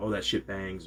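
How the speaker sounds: ordinary delivery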